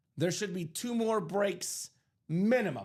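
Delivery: minimum stressed, with a falling finish.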